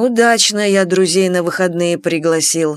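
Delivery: ordinary delivery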